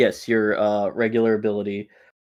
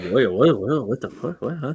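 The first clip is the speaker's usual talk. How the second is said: fast, bewildered, baffled confused reaction; 2 semitones higher than usual. Voicing onlookers who see a beam of light rush past: confused bystanders reacting. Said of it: "they're just like".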